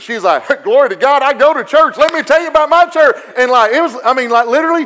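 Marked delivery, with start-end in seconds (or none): 0.6-3.2 eager, high, excited, cheerleader-style gushing. Retelling how a waitress answered a church invite: imitating an excited waitress. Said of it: "she about pulled pom-poms out of her pocket".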